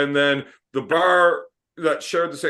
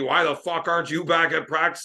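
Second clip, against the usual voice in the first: mock screaming coach voice, contained angry bark; 2 semitones higher than usual. Retelling how the coach burst into the bar: imitating a coach screaming. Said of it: "fucking yelling at me, screaming at me".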